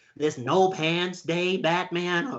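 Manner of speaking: slow, drawn-out villain voice with stretched words. Telling about a no pants day, slipping into a Joker voice.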